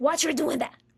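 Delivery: harsh, stern scolding grandmother voice. Describing how ayahuasca can speak, the speaker imitates an admonishing voice. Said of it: "this admonishing voice".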